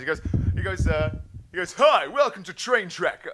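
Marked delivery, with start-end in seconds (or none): 1.7-3.3 put-on brash, robotic, machine-like presenter voice. Imagining him coming out of the darkness, greeting: brash robotic Clarkson voice. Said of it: "brash male cyber Clarkson. This is how he sounds".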